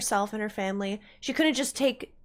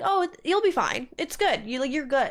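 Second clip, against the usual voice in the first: mock-nonchalant, casual, dismissive, higher pitch; 2 semitones higher than usual. Speaker complains about a man brushing off horrible events, mimicking his nonchalant reply. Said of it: "He's so nonchalant about the horrible things".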